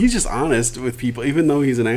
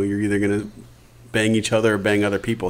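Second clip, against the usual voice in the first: ordinary talk, nothing marked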